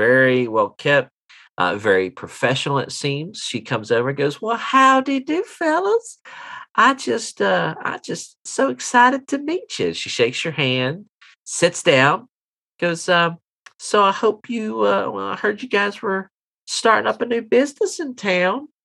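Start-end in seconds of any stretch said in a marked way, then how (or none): 4.4-18.6 flirty tone, higher pitch. Voicing a well-dressed lady applying for a job: flirtatious. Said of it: "turn your, um, flirtation down about three notches".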